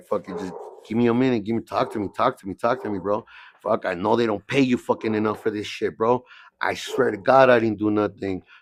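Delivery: ordinary talk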